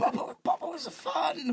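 put-on very high, slow baby voice. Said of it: "Was he a Tommy impression?".

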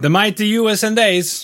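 put-on comic Kazakh-style accent. Talking about America, suddenly bust out into a Borat voice. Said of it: "I busted out into a Borat voice for that one".

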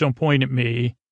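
usual speaking voice

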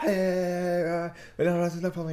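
play-acted, very drawn-out, high, top-of-voice yell. Retelling shouting to draw people out of nearby houses: imitating shouting at top of voice. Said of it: "top of my voice".

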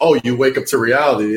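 plain

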